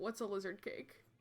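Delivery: soft, hushed half-whispered voice. Playing EJ in the game, asking Esther a question, half-whispering. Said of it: "E J's gonna whisper to Esther".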